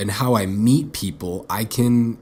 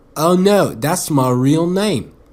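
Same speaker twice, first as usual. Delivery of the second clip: put-on terrible English accent, high, drawn out very slow; 5 semitones higher, 4 dB louder than usual. Retelling a chat with Alfie, quoting his reply in a bad English accent. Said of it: "That's a fucking terrible English accent".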